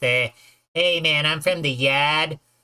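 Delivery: clumsy, slow, bad put-on Boston accent. Mocking americans who can't do accents: bad boston accent. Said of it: "trying to sound like they're from Boston".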